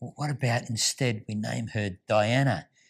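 whispered voice. Retelling a husband's question to his wife during childbirth: imitating a whisper. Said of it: "whispers in her ear and says".

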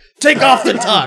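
high, loud, furious angry yelling.

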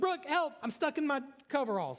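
acted, frantic, terrified, very high-pitched cry. Retelling calling for help while stuck in coveralls: imitating own terrified plea. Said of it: "I'm terrified".

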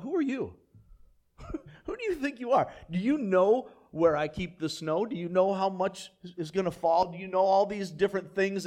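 heavily sarcastic, dripping with sarcasm. Retelling God questioning Job in the passage: imitating God being sarcastic. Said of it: "God's somewhat sarcastic".

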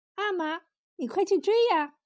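high, playful, lighthearted joking tease. A young princess points to a distant man and teases her father: teasing. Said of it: "打趣儿道".

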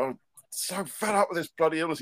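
acted-out rage. Speaker recalls their partner seeing them rage about their illness: retelling own raging. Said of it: "my partner Alice has seen me raging and going".

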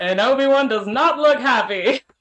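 dramatic play-by-play broadcast announcer delivery. Mocking the idea of an announcer calling every action, in a Legend of Korra announcer voice. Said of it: "Why did you sound like the announcer".

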